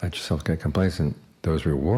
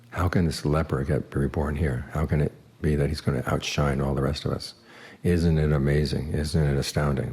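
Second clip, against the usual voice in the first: usual speaking voice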